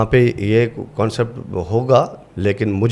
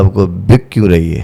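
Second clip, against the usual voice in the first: put-on drunken voice, louder; 2 semitones lower, 6 dB louder than usual. Retelling a stage role's line, imitating a drunk retort. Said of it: "नशे की हालत में ऐसे ऊपर सर करके मैंने कहा".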